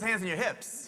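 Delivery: plain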